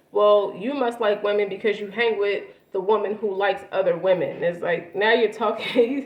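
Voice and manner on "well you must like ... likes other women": ordinary talk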